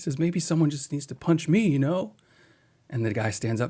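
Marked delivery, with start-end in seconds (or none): 0.2-2.1 crying, high, tearful, pleading voice. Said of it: "And he's crying".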